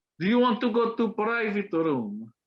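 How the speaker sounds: high-pitched put-on Russian accent. Retelling what a woman said to him after he said he was colombian, russian accent. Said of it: "fucking like Russian ass accent".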